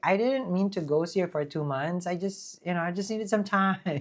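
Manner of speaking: ordinary talk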